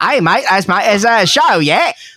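thick put-on Australian accent. Asked to try it, imitating a director: heavy Australian accent. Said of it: "with a heavy Australian accent".

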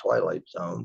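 ordinary talk

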